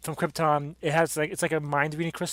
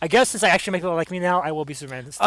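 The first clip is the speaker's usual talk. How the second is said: ordinary delivery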